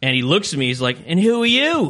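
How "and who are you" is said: badly done, high-pitched put-on Liverpool Scouse accent. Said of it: "My impression's real bad".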